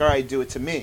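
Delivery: ordinary delivery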